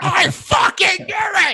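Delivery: put-on very high, stretched-out screaming. Retelling how Terry reacted to the heckler's name: imitating Terry screaming. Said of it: "he starts screaming".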